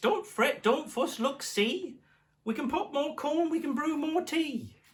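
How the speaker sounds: very high, tiny, squeaky mouse voice. Reading a story aloud, the mouse answers the bear in a squeaky mouse voice. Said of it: "Mouse squeaks".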